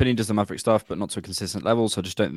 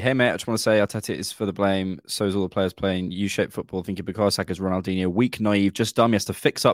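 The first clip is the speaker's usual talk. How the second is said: ordinary delivery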